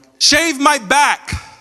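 acted, high-pitched, angry yell. Recalling high school, the speaker acts out Fo shouting from the bathroom, imitating Fo yelling. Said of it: "And he's yelling upstairs".

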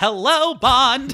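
very high, loud put-on character voice. Acting out q greeting bond in the next film: q impression.

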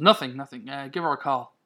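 plain reading voice

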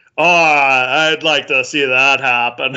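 put-on dismissive laughing voice. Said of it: "laughing it off".

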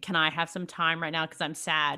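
plain

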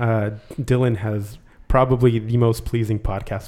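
ordinary delivery

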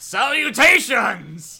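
very high, booming, bellowed yell in a put-on voice. Charging an enemy down a sewer pipe, yelling in character. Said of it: "yelling it as you barrel down the sewer pipe".

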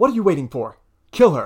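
muffled, tinny sound. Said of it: "you just hear her muffled tinny voice go".

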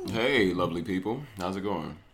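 quiet sultry voice, deep, soft and hushed. Greeting the audience on joining the show: quiet, sexy voice. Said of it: "quiet, sexy voice".

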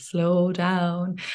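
deliberately slow, drawn-out delivery. Showing how the speaker tells clients to slow down: said slowly. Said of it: "even say it slowly".

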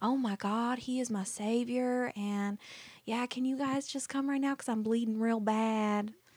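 put-on light, slight Southern accent. Retelling a caller's nine one one call: imitating a southern accent. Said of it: "a little accent, a Southern accent".

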